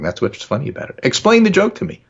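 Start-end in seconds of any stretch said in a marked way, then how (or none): 1.0-1.9 high, loud, literal-minded tone. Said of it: "the S has to be exact and precise".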